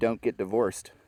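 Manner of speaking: ordinary talk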